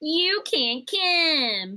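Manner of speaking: loud, high cartoon voice, "come" drawn out. Joking about theaters turning people away, in an Eric Cartman voice. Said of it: "That was my best Eric Cartman voice".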